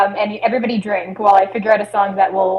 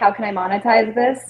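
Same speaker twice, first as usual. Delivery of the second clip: plain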